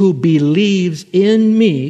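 slow, loud and high delivery.

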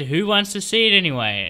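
ordinary delivery

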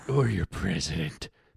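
put-on tough antihero voice. Repeating a movie line after the clip, Snake Plissken voice. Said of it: "Do I sound anything like Snake Plissken".

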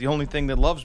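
playful joking manner. Retelling a conversation about an otter, retelling a joking remark. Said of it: "and I was joking".

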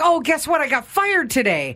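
put-on bursting excitement, high and swooping. Retelling how a man greeted them after their bus trip, imitating someone excited. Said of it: "he's all excited to see us".

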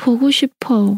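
said sadly, sorrowful. Demonstrating a Korean phrase said a second way, sad. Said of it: "Or you can say it in a sad way".

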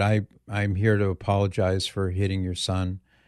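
plain

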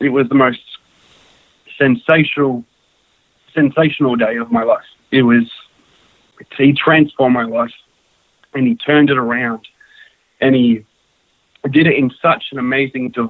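choked up, halting, voice catching and breaking. The speaker recounts finding God, choked up. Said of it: "I'm getting a bit choked up".

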